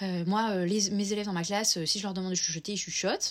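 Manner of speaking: irritated, lecturing teacher voice.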